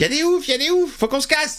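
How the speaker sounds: put-on high, panicked old man voice, blurted out.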